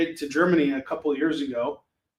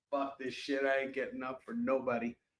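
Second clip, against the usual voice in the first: sleepy, lazy, dozy, can't-be-bothered dog voice; 2 semitones lower, 11 dB quieter than usual. Calling a sleepy dog who won't come, voicing Bentley the sleepy dog. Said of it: "He's like".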